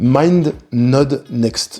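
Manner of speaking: slow, deliberate, each syllable carefully placed. Introducing a name they can't pronounce quickly, said slow and careful. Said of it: "je le dis doucement parce que j'arrive pas à le prononcer rapidement".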